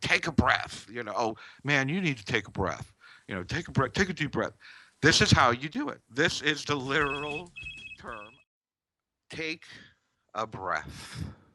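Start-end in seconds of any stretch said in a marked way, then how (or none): 0.0-4.5 mimicked sarcastic tone, higher and faster. Explaining breathing, mimicking what people say to someone upset; imitating sarcastic people. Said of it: "they say it sarcastically".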